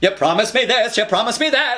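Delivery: high, nasal, theatrical voice pushed through the nose. Demonstrating nasality in musical theater character voices, nasal Adelaide voice.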